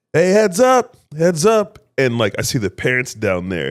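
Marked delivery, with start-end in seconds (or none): 0.1-1.8 play-acted, very high, drawn-out calling-out yell. Retelling warning kids ahead while cycling downhill: imitating own yell. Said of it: "let me just yell".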